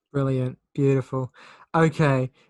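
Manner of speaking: loud, sounding completely fed up and done. Reacting after another speaker urges everyone to listen to an album: sounding done with someone. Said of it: "You sounded so done with me".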